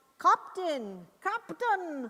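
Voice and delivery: poor put-on Scottish accent, high. Retelling a Star Trek scene, voicing Scotty on the intercom: terrible Scotty Scottish accent. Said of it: "I do a terrible Scottish accent".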